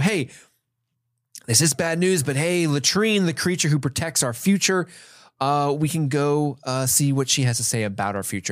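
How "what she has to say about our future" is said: normal talking voice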